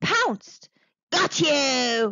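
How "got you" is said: loud monster shout, drawn-out "you". Narrator reading the monster's line as it pounces on the snake, shouting monster voice. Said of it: "shouted the monster".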